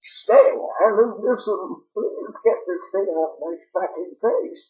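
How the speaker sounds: put-on breathless, choking voice. Mocking a character's voice that was not what the trailers promised, as Deckard Cain being asphyxiated. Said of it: "Deckard Cain being asphyxiated".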